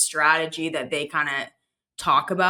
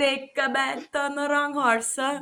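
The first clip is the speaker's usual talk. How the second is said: teasing put-on Italian accent, pitched very high; 9 semitones higher than usual. Doing the voice of a man who teases the speaker, italian accent impression. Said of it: "I love the Italian".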